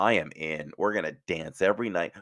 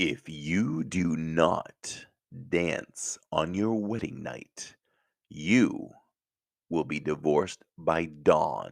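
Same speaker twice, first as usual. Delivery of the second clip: sinister, evil animated cartoon villain voice. Speaker retells warning a bride before her wedding, in an evil Disney voice. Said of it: "Evil Disney voice".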